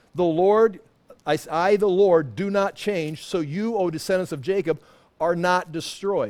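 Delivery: ordinary delivery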